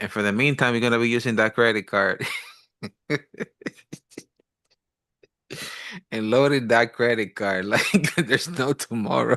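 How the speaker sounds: talking through laughter. Talking about living on a credit card while waiting for payday, laughing while talking. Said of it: "Sorry for laughing".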